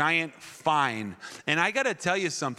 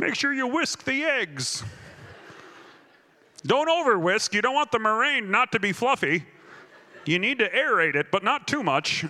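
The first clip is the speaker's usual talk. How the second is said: put-on higher-pitched grandmotherly voice; 7 semitones higher, 3 dB louder than usual. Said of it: "That sounded like my grandma".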